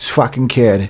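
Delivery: put-on southie Boston accent. Describing how people talk now, doing the Southie accent. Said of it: "the Southie kind of like".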